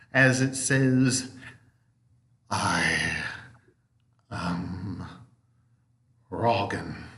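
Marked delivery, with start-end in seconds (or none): 2.5-6.9 very low, soft, ominous rumbling grumble. Voicing a spider that is asked its name and finally answers: low, grumbling, ominous voice. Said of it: "gives a low, grumbling voice as it, and kind of a very ominous tone".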